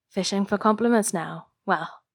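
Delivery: ordinary delivery, nothing marked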